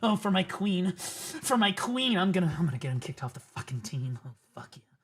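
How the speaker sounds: mocking, put-on simp voice. Mocking people who try to get someone kicked off the team: mocking a simp. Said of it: "the same simp fucking bullshit behavior".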